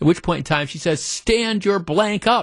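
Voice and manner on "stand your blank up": furious, high, angry screaming woman's yell. Retelling a woman's confrontation with a man over a mask: retelling a scream. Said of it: "And now she's screaming".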